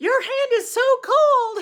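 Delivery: startled, very high, very loud, shrill shriek. Retelling jumping out of a chair at a cold touch: imitating own scream. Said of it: "I screamed".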